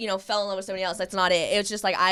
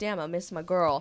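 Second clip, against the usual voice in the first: usual speaking voice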